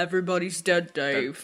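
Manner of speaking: very deep-timbred, voice dropped way down. Imagining a line spoken in a deep voice: Alan Rickman voice. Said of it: "deep, deep timbre of Alan Rickman's voice".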